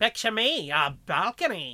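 put-on, old-fashioned, antique-sounding old-timey voice. Acting out a scene with a co-host, in an old-timey voice. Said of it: "I'm just throwing old-timey voices on".

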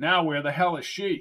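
ordinary talk

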